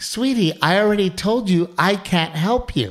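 acted, high, syrupy, sugary condescending sweetness. Mimicking people who say things with a smile: mock condescending sweetness. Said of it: "Condescending nice".

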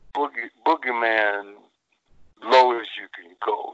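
slow and low delivery. Recreating how he talked in an interview with the blues playing, very slow, low voice. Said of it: "I'm talking like this. I'm talking real slow, real low".

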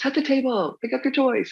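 high-pitched, shrill parental yelling. A mother making dinner recalls calling out to her young kids, retelling a yell at kids. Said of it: "I'm yelling".

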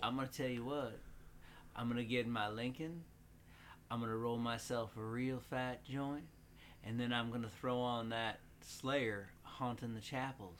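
creepy fake drawling voice. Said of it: "You do a good, creepy [name]".

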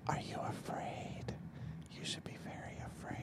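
eerie, ghostly, spooky hushed whisper. Opening a spooky-themed radio show episode: spooky whisper. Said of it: "I'm just whispering because that's supposedly spooky".

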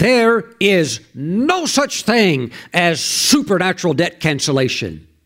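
slow, scornful, thundering preacher voice. Retelling what a preacher thundered from the pulpit: imitating a scornful thundering preacher. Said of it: "And he said it with scorn".

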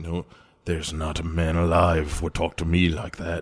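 a bit of a pirate voice, defiant growl. Quoting what James Delos tells William, in a slightly pirate-like voice. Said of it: "A bit pirate".

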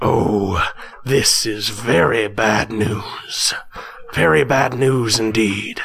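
very slow, low mutter under the breath. The narrator voices the dwarf in the next cell, muttering under his breath. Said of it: "you hear from the voice of the dwarf in your cell next to you, [name], you hear the dwarf that gave you those three cigarettes mutter under his breath, / you hear from the voice of the dwarf in your c".

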